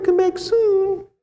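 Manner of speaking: very high puppet-theatre voice. Speaker retells a story, doing a puppet show voice. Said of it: "Sound like one of those puppet shows".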